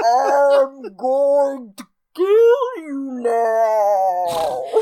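very slow, drawn-out slow-motion giant voice. Retelling a movie scene, acting out the giant's line: slow-motion giant voice. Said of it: "really slowly like".

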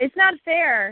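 shouting. Leading a call-and-response exercise, the other echoing each line: yelling. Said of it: "I want you yelling".

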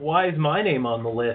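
normal talking voice

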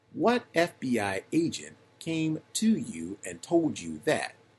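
stern, severe tone. A prosecutor questions a witness about an FBI agent, in a stern voice. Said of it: "In a stern voice".

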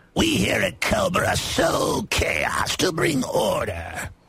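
cartoonish villain voice. Joking that the government is Cobra, doing a Cobra Commander impression. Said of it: "I like his Cobra Commander impression".

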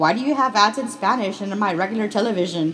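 ordinary talk

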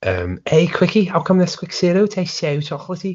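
put-on very high, young Liverpool Scouse kid voice. Recalling an old TV cereal advert, quoting its kid, Scouse kid from Nesquik advert. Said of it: "there was a Scouse kid on it".

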